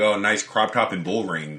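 ordinary talk

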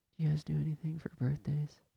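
almost inaudible, hushed, near half-whispered murmur. Retelling someone speaking at a busy counter: imitating someone talking very quietly. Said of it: "talking as quietly as [name]".

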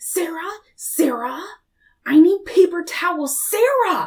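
loud, nasty, shrill, drawn-out screeching. Retelling how she screamed for someone instead of getting up, imitating someone screaming. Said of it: "she was literally screaming".

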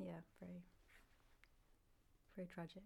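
slow, breathy, hushed sarcastic near-whisper. Answering another speaker's remark: sounding sarcastic. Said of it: "That sounded really sarcastic".

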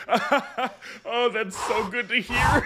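deeply relieved voice, high and slow. Retelling his reaction when a dragon only wants food, imitating a relieved king. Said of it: "he's so".

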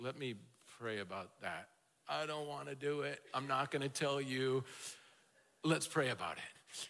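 flat, lifeless one-note monotone, very low and soft. Imitating someone dodging a request to use their spiritual gifts: imitating a monotone reply. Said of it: "they either monotone".

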